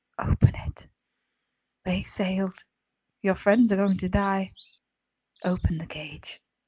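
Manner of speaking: hushed, whispering woman's voice. Voicing a woman urging a player to open the cage: whispering voice. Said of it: "the whispering voice of the woman".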